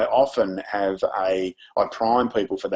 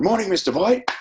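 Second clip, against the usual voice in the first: mock eager, very high, excited, enthusiastic, in chorus; 12 semitones higher, 4 dB louder than usual. Retelling a crowd learning the school greeting: imitating an excited greeting. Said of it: "say it with excitement and enthusiasm".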